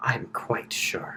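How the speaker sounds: soft, breathy whisper. Voicing a character with a dagger at someone's throat: whispering in character. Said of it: "and she whispers in your ear".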